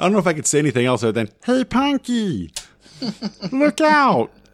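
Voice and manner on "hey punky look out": very high, very slow, shrill, swooping, annoying cartoon voice. Mimicking an annoying sidekick calling to Punky, in the most annoying Saturday-morning voice. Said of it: "The most annoying voice on Saturday morning".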